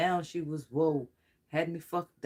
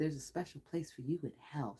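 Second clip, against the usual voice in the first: the softest possible hushed voice; 11 dB quieter than usual. Relaying what Persephone said while channeling her, in Persephone's soft voice. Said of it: "She has the softest voice".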